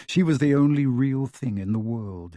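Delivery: ordinary delivery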